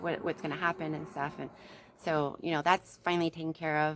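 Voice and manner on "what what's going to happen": ordinary talk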